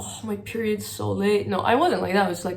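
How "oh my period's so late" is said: glum, downcast, mopey, down-in-the-dumps tone. Showing the way she says she did not tell it: down voice. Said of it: "I didn't put it in a down voice of like".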